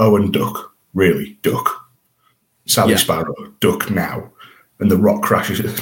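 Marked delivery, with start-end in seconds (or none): 0.0-4.3 slow, deliberate, read-aloud delivery. Retelling an episode's opening scene aloud, quoting a warning: David Tennant voice. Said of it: "I read this in Tennant's voice".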